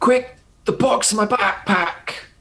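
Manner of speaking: yelling out. In a tabletop game, a player voices their character's line, shouting. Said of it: "And then he's going to shout".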